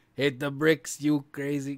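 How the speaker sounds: put-on Brooklyn accent. Retelling what the workers said to get out: Brooklyn accent. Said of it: "the Monty Python guy's got that Brooklyn accent".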